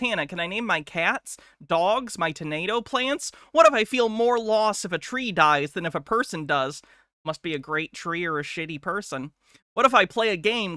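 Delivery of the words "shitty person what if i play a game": normal talking voice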